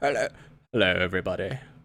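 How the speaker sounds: put-on English accent. Imitating another speaker's dad from England greeting everyone: put-on English accent. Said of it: "Your dad comes in, he's like".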